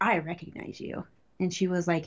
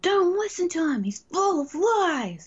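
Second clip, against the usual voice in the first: shrill, very high, yelled shout; 11 semitones higher than usual. Retelling heckling a commander's propaganda speech while walking past: retelling a shout. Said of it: "just like shouted it as I was walking by".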